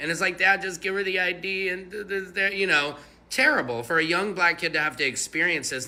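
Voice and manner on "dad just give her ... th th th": put-on high, tearful, crying little boy voice. Retelling a video where a young son pleads with his dad: imitating a crying child. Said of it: "youngest son starts crying".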